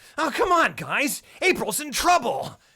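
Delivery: very high, loud, slow, drawn-out call. Comparing a voice actor's roles, quoting one: Leonardo voice. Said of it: "Is that Leonardo?".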